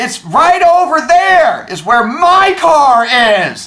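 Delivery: very loud announcing voice. Retelling telling a police officer where the car is: retelling raising own voice. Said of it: "make sure it's loud enough".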